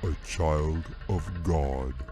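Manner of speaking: deep rumbling voice, very slow and drawn out. Narrating a story as the enormous bear speaks for the first time, deep rumbling voice. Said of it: "he said in a deep rumbling voice".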